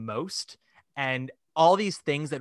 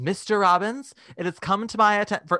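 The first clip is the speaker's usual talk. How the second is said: very exaggerated, flamboyant voice, higher in pitch; 7 semitones higher, 4 dB louder than usual. Retelling Jule Styne stomping on stage during a rehearsal, queeny Jule Styne impression. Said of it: "I'm making him sound like the queeniest of queens".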